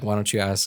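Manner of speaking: put-on tearful, crying speech. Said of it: "in my tears".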